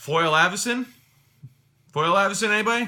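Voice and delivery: loud, high, blurted shout. Retelling picking a card, the speaker reenacts calling out accidentally loud. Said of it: "I said it so loud".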